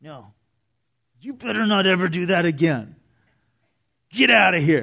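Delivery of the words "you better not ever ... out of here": furious, spoken through gritted clenched teeth. Speaker acts out a tone he rejects for the figure's words, angry, through clenched teeth. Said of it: "an angry, teeth clenched".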